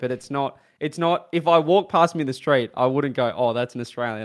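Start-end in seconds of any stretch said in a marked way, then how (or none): none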